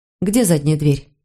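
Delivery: plain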